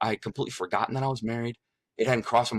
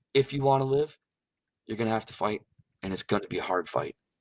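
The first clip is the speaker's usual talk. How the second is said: hushed, very quiet, utterly calm voice. Retelling words heard during a near-death experience: imitating a very quiet, calm voice. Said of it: "he just said very quietly, calmly".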